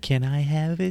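very high, loud, squeaky little voice. Recalling a scene from a horror show, imitating Danny's little voice. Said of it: "Did you hear his little voice say".

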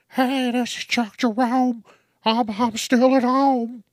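very high, drawn-out, silly put-on voice. Imagining how they'd sound after years at a desk job, mock high-pitched voice. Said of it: "My voice would get high".

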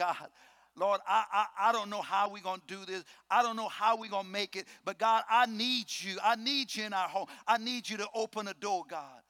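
weeping, crying, tearful voice. Recalling praying before God in hard times, retelling a tearful prayer. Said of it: "getting before God crying".

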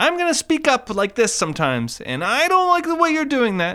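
very high, stiff, wooden line reading. Showing how all of an actor's lines sound: imitating Matthew Broderick. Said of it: "all of his lines sound like this".

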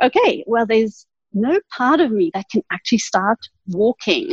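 normal talking voice

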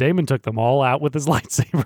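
ordinary delivery

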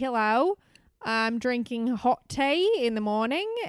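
slow put-on Australian accent, chewed in throat. Joking about how Australians sound, doing an impression in a put-on Australian accent. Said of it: "That's my impression of an Australian person".

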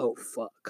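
very soft muttered whisper under the breath. Retelling a girl's reaction after her chair hit someone, muttered under her breath. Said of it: "I could just see under her breath".

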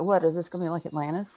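ordinary delivery

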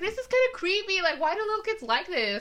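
high-pitched, creeped-out inner voice. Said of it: "I'm just like".

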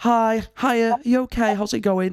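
put-on extra-nice friendly voice. Retelling chatting with a dinner lady, the speaker answers in a put-on kind voice. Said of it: "I'm doing my kind voice".

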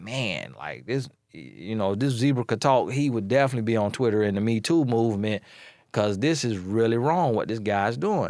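ordinary delivery

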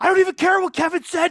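very high, panicky, frantic outburst. Retelling Sami Zayn's backstage promo, imitating Sami Zayn freaking out. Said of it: "he's like freaking out backstage".

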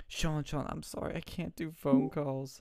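put-on tearful crying voice. Retelling what she said on a phone call, imitating someone crying. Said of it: "And she's crying".

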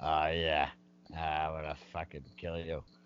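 creepy, menacing horror-villain voice. Retelling a coach's smirk, imitating a creepy smirking threat. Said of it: "he's got that weird fucking smile".

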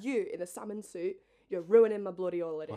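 loud, furious, angry rant, going off. Retelling a woman on holiday yelling at a man: imitating a very angry woman. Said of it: "she was so angry".

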